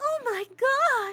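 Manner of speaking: put-on, high-pitched anime girl voice. Showing off an anime voice while pretending to be an anime girl, put-on anime girl voice. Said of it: "let me do the one anime voice".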